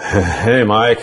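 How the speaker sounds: put-on stoned-sounding voice, laughing while speaking. Retelling how a classmate greeted him: imitating a stoned classmate laughing. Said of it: "he'd start going".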